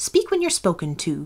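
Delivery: sharply cutting in, snapping tone. A queen cuts off a girl who timidly began to speak, sharply interrupting. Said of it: "the Queen sharply interrupted her".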